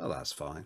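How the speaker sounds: glum, deflated, depressed, dejected, resigned tone. Reacting to news the game won't come to the Switch: depressed-sounding. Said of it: "you said that in such a depressed way".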